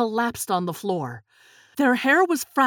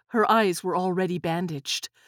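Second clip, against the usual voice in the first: ordinary delivery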